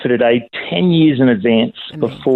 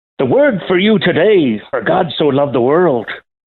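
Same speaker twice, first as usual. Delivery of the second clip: best-effort put-on Irish accent; 4 semitones higher than usual. Speaker challenged to match an Irishman's recording, in a put-on Irish accent. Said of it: "you do your best Irish accent".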